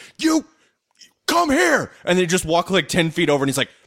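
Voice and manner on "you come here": mock frustrated, furious, very high outburst. Retelling a favorite movie moment right after Riggs jumps, imitating Danny Glover frustrated, furious and confused. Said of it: "he is so frustrated, furious, and confused".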